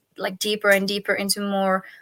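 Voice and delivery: ordinary talk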